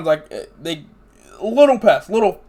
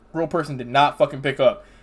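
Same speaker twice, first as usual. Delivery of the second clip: normal talking voice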